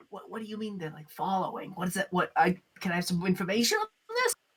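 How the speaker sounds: low, hushed, guarded and confidential tone. In a game scene at the bar, a player asks for information: lowered voice. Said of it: "and I lower my voice".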